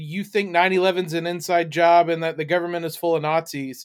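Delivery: normal talking voice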